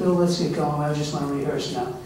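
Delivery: normal talking voice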